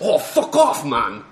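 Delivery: loud, very slow, drawn-out put-on English accent. Retelling a player swearing angrily during a game: imitating Warbear's English accent. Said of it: "in his English accent is pretty funny".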